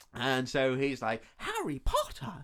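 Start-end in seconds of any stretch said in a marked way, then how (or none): 1.3-2.4 very high, squeaky, posh elf voice. Describing how a Harry Potter elf talks, quoting him, in a Dobby voice. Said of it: "Dobby voice".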